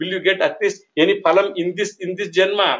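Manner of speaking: ordinary delivery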